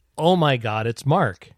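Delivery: loud, drawn-out yell. Retelling an audience member's shout on stage: imitating someone yelling. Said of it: "I heard somebody yell".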